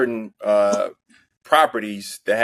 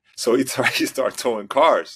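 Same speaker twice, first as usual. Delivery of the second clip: speaking while holding back a laugh; 3 semitones higher than usual. Telling a story as another speaker interjects, holding back a laugh. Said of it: "I'm trying I'm trying not to laugh".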